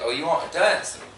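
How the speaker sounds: plain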